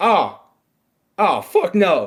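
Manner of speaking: high, disgusted, hard-balking street-tough gang-member voice. Imagining a gang member on a jury reacting to the defendant, imitating a gang member juror. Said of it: "blood was part of that jury and goes".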